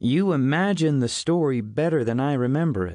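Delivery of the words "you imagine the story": ordinary delivery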